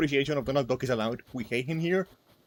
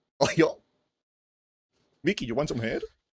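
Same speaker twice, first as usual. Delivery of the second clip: deliberately terrible put-on cartoon dog voice. Joking with a co-host who mentions Goofy: terrible Goofy voice. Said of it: "my terrible, uh, Goofy voice".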